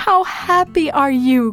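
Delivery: crying out with joy. Elizabeth greets Mary as she enters the house, crying out with joy. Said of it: "cried Elizabeth".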